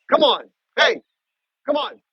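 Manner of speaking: very high-pitched, loud calling-out yell. Interrupting his talk to call after her when she runs off, yelling. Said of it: "Sorry to yell".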